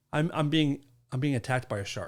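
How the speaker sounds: ordinary delivery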